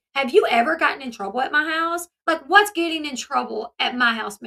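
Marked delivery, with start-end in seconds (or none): none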